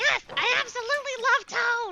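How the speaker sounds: very high, shrill, overpowering belted character voice. Answering whether a Toad fan, a little less powerful: Toad voice. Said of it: "make my Toad voice a little less powerful".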